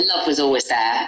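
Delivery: normal talking voice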